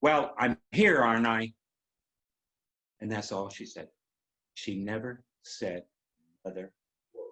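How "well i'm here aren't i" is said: strongly defiant voice. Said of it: "in a very defiant tone says".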